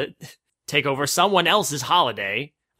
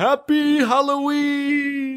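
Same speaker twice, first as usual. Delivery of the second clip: very high, put-on voice, pitched way up; 12 semitones higher than usual. Recalling a favorite movie moment, quoting the line in Santa voice. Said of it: "in that Santa voice".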